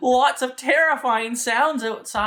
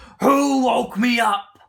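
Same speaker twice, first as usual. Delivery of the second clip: big bellowing lion roar voice; 3 dB louder than usual. Narrator telling a story speaks as the woken lion, roaring lion voice. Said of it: "and the lion roars".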